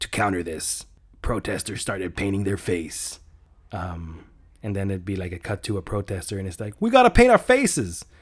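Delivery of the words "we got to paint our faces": put-on high, loud, yelled Boston accent. Acting out a protester's line in a movie pitch: Bill Burr Bostonian accent. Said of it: "I don't know why he has a Bostonian accent".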